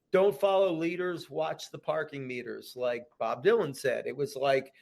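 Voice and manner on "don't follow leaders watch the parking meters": usual speaking voice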